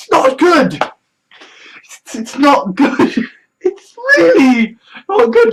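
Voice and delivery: talking while laughing through the words. Saying how bad the news is: laughing while talking. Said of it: "I'm laughing as I'm saying this".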